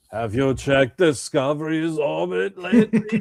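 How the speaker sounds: clumsy put-on Russian accent. Imitating the Russian guy at the beginning of a film, in a shitty Russian accent. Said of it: "why are you doing that shitty Russian accent?".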